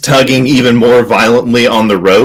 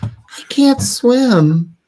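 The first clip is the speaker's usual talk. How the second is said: put-on very high, soft, tiny little girl voice; 13 semitones higher, 5 dB quieter than usual. Voicing a character's reply in a story, in a little girl's voice. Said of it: "in a little girl's voice".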